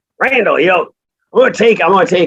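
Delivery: put-on high-pitched Arkansas accent. Retelling a coach friend's phone call to him, in an Arkansas accent. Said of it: "like Arkansas accent".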